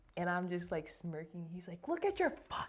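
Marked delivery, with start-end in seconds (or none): 1.8-2.7 put-on scream, higher. Retelling how a short man started screaming in the speaker's face: imitating someone screaming. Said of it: "he starts screaming in my fucking face".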